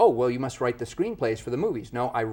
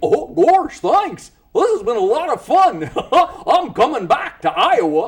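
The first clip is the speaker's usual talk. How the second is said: voice swooping around, high and loud; 11 dB louder than usual. A voiceover actor showing off character voices in an interview; Goofy voice. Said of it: "And Goofy".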